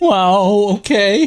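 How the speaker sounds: anxious, uneasy, nervous voice, drawn-out "wow". Asked to redo the line nervous, the speaker performs it nervous. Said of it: "Can you do it nervous".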